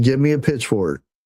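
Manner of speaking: usual speaking voice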